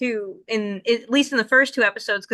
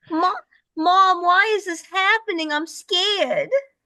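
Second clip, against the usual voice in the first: put-on Boston accent, pitched up high; 9 semitones higher than usual. Discussing an anime, speaker voices a frightened line as Molly, in Molly's Boston accent. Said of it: "Molly with her Boston accent".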